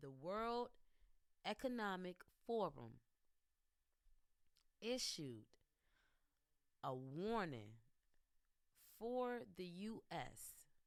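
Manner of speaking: slow, unhurried speech. Addressing viewers so they can write the information down, talking slowly. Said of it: "I'm going to talk kind of slow".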